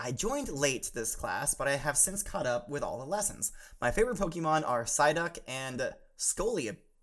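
ordinary delivery

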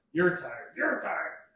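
loud, high-pitched, hollered repeated shout. Describing a scene to a player, a crowd yelling: yelling. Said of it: "you hear all this yelling about".

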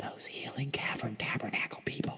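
hushed, near-whispered, voice dropped low. A woman answers a question about an occult section, lowered voice. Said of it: "she lowers her voice and says".

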